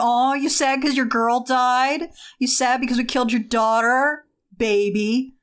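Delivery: snide, mocking, mean teasing tone. Retelling the vampires' reaction as popular kids off to one side: mocking popular kids' taunt. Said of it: "all the popular kids standing off to one side going".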